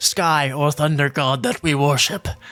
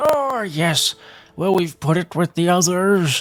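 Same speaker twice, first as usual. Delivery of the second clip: put-on elderly man character voice; 3 semitones higher than usual. Speaker voices a character answering a player about a body, old man voice. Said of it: "Wrong old man voice".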